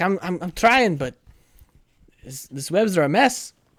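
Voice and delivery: frantic, high, panicked screaming. Voicing a character trapped in webs, trying to cut free: screaming in panic.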